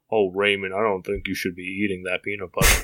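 super low, deep voice, as low as possible. Showing how a tall animated character talks, addressing Raymond, in a Sam Elliott-style super low voice. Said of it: "He has like a super low voice".

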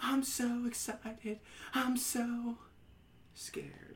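very slow delivery, every word drawn out. Recalling a TV scene, imitating Jesse Spano. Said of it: "and she's like".

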